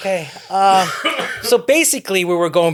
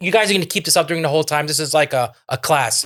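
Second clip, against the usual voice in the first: plain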